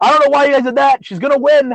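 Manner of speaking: high, snide, sarcastic shout. Imagining her own upset reaction to what the others did, mock sarcastic shout. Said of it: "I would like literally have shouted it so everyone heard".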